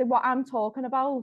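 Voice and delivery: plain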